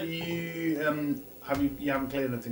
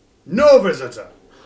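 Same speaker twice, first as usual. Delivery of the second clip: very loud, thundering, booming creature voice; 4 semitones higher, 16 dB louder than usual. Answering the players in a game scene, in a loud booming voice. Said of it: "It's louder now".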